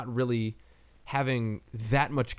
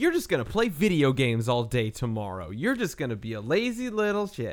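swooping, chastising, telling-off scold. Retelling a movie's opening scene, imitating someone chastising.

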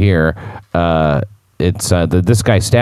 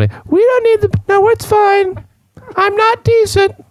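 very high put-on woman's voice. Acting out a suspect faking a woman's voice to the police: put-on woman's voice. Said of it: "by imitating a woman's voice".

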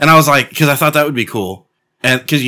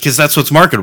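normal talking voice

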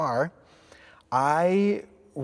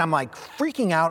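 usual speaking voice

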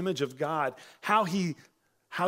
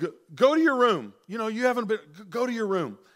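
mock harsh voice, higher and louder; 5 semitones higher, 6 dB louder than usual. Imitating a dad sending kids in trouble to their room: imitating a harsh dad. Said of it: "and that harshness".

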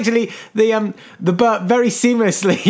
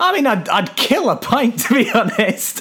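mock light, jokey, offhand delivery. Retelling your answer when she asked what she could do: retelling a joking remark. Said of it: "I very jokingly said".

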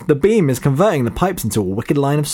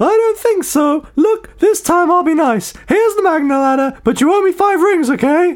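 very high-pitched cartoon mouse voice; 14 semitones higher than usual. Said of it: "I've turned into Mickey Mouse".

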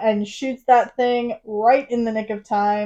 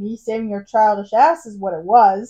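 ordinary delivery

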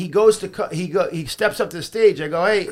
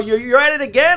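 loud, pitched-up yelling; 7 semitones higher, 5 dB louder than usual. Onstage, the speaker retells yelling at a talking audience member, retelling a yell. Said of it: "I'm yelling".

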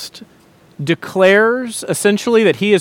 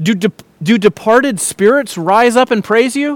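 sarcastic, mocking, put-on snide tone; 2 semitones higher than usual. Quoting a man's complaint to god, retelling his words snidely.

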